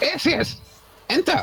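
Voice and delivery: shrill, very high, hissing little creature voice. In a tabletop game, a player answers from outside the dungeon in a squeaky, hissing voice. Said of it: "in the squeakiest, most hissing voice that I can".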